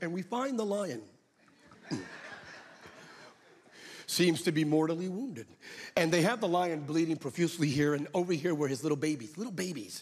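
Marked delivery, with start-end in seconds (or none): 0.0-5.5 beautiful wildlife documentary narrator voice. Describing a nature special about a wounded lion, doing the National Geographic narrator voice. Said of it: "in that beautiful narrating voice".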